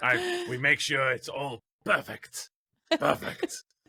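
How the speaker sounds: stock, put-on German accent. Imitating how the Germans do the work, put-on German accent. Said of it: "That's the best German accent you're getting".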